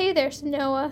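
plain

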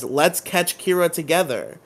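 ordinary delivery

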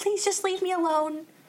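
acted calm pleading. Retelling how a character begged after her boyfriend's murder: imitating a calm plea. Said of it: "But she's so calm, and she's like".

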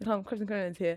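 hushed, very quiet, barely audible half-whisper. Retelling a moment between floors on an escalator: retelling a half-whisper. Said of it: "I just whispered to the".

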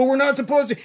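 mock frightened stammering, very high-pitched. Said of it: "she was just terrified and stammering".

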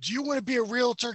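mock screaming infomercial voice. Recalling late-night TV infomercials: imitating a screaming infomercial guy. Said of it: "some guy screaming at you".

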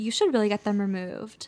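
sassy, sharp delivery. Retelling what a dentist said about wisdom teeth: imitating a sassy dentist. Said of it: "Why is he talking so sassily?".

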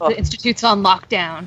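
play-acted firm, authoritative, in-charge commanding tone. Describing how a character gives orders, imitating Alec's authoritative voice. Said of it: "with that authoritative voice".

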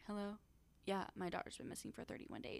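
breezy, unbothered, casual, nonchalant, offhand tone. Contrasting two relatives' reactions, imitating Casey nonchalant. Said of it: "so nonchalant".

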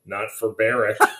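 put-on flat deadpan. Retelling someone's reply at the end of a conversation: mock total deadpan. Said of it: "total deadpan".

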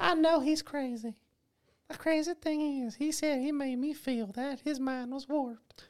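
squeaky, very high, cartoonish put-on voice. Redoing a quote from the girl who survived, sounding like the Family Guy guy. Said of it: "You sound like the guy from Family Guy".

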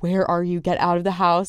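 reenacted frightened panicked voice. Retelling calling a friend to get out of the house: retelling scared panicked words. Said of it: "I was so scared".

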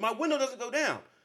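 acted, very high, exasperated yell. Telling how a man banged on his trunk and window, retelling a yell. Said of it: "I start yelling".

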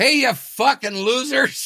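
put-on, very high, screamed shriek. Recalling midnight at the gym on New Year's, speaker replays their shout: retelling a scream. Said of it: "I screamed out".

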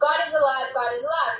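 ordinary delivery

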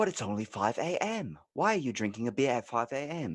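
put-on British accent all the way through. Playing a scene opposite a southern guy drinking beer, UK accent. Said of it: "I will do my UK accent".

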